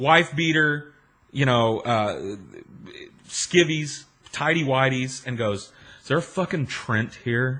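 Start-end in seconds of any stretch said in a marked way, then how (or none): 6.0-7.6 sleepy, groggy, irritated, angry voice. Retelling a sleepy dad coming downstairs with the phone: imitating an angry dad.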